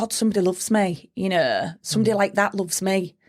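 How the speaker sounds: usual speaking voice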